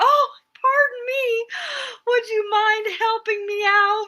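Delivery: put-on, very high, sweetly charming, cute voice. Retelling asking a gentleman for help, in a put-on cute, charming voice. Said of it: "I had to be cute and stuff and go".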